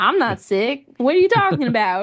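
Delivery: put-on twangy Southern accent. Retelling a woman arguing for hours over her fever, imitating a southern twang. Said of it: "she's got that southern twang".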